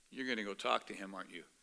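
hushed, quiet half-whisper. Retelling what a buddy said at a bus stop: imitating a half-whisper. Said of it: "whispers in my ear".

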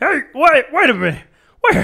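very high, loud, belted hollering. Showing another speaker an impression being practiced: John C. Reilly impression. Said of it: "kind of in here".

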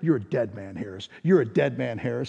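hushed half-whisper, very close, repeated. Retelling a threat half-whispered in the ear on the bus: imitating a half-whisper. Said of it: "he's whispering in my ear".

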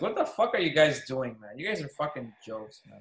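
ordinary talk

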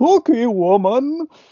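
put-on dramatic yell, very high and loud. Comparing two movies, quoting an actor's line: imitating Donald Pleasence's dramatic yell. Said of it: "dramatically s-, yells at one point".

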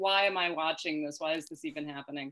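normal talking voice

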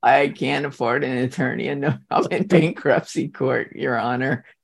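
normal talking voice

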